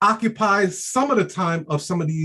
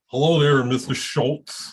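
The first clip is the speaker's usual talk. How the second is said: low, put-on, polished, proper corporate voice; 5 semitones lower than usual. Showing the voice he'd switch to for a meeting with a bank executive; changed-up voice for a bank meeting. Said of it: "Let me change my voice up".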